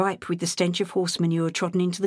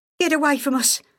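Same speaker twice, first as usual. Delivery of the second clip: frightened, shrill, high outcry; 8 semitones higher, 4 dB louder than usual. Peggy cries out to a man addressing her and her daughter, shrill cry. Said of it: "Peggy cried, her voice shrill".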